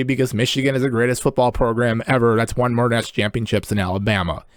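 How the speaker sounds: ordinary talk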